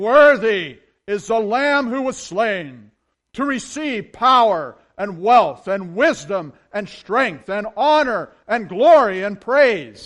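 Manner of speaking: loud, high, heavenly angel chorus proclaiming. Reading scripture aloud, voicing the angels' praise in a loud angel voice. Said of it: "That's my loud angel voice right there".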